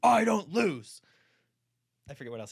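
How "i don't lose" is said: very loud, high-pitched, belted boastful delivery. Quoting a lawyer's line from a film scene: Keanu Reeves impression. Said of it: "That's my Keanu impression".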